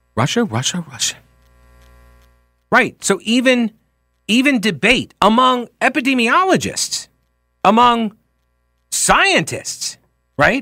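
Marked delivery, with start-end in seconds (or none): 0.2-1.2 put-on acted sitcom teenage girl voice. Discussing flagged COVID tweets, the speaker repeats it in a Jan Brady impression. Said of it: "that's my Jan Brady impression".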